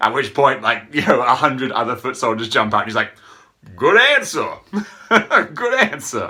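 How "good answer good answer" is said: put-on pitched-up, swinging, lilting Brooklyn accent. Recounting a movie scene, quoting a character's reply in a Brooklyn accent. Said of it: "it's a Brooklyn accent".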